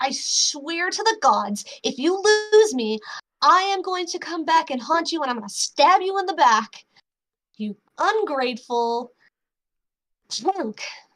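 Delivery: angry, grumbling mutter full of anger. Game master voicing a mysterious voice the players start to hear: muttering voice. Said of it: "it's just like this muttering".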